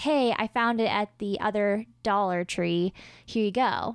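ordinary delivery

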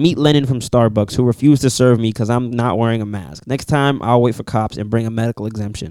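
ordinary talk

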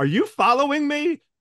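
very high, loud yell. Recounting how a guy behind them yelled during a dog walk, retelling a yell. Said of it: "a guy behind me yelled".

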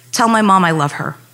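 ordinary talk, nothing marked

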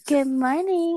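mocking, put-on sultry, seductive voice. Teasing a friend about how she talks, imitating Misha's seduction voice. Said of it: "You don't have to talk like that".

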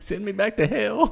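high, loud, slow, drawn-out, pleading laughing demon voice.

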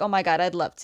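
usual speaking voice

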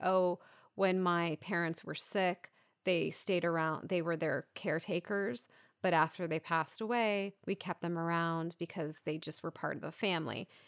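ordinary delivery

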